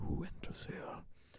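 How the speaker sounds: hushed whisper. Narrating a game scene, a voice answers a knock from behind a door, hushed whisper. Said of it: "a hushed whisper from the door".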